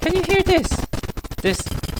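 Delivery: very high, loud mock voice.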